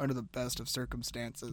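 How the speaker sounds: put-on mutter under breath. Recapping a scene, quoting a character's reply; imitating someone muttering. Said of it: "under his breath goes".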